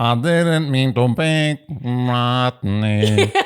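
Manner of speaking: imitated auto-tune effect. Trying the imitation again, better this time: fake auto-tune voice. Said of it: "your idea of auto-tune".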